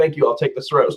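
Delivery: ordinary talk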